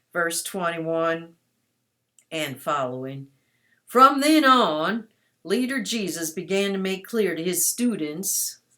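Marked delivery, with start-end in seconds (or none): 3.9-8.6 loud, imperfect, put-on southern US accent. Reading a bible passage aloud to listeners, in a put-on southern accent. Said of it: "So I have to put on my southern accent".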